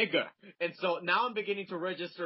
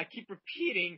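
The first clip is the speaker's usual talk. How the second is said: ordinary talk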